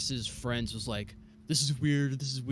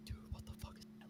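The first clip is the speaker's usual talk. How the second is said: fast, shocked, breathy whisper, barely audible. Recalling breaking the silence with friends on seeing something, retelling a whisper. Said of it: "I just whispered".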